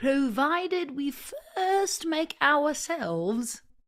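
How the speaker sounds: put-on British accent. Reading a text line by line, repeating each line in a British accent. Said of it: "and then I'll repeat it in British".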